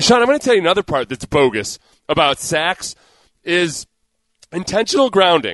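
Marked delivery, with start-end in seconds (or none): none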